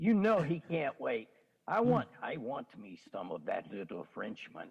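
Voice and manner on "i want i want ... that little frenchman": put-on very low, deep French accent with swooping pitch. Talking about Joker in Denver, giving a Joker quote in French accent. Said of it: "He said that with a French accent".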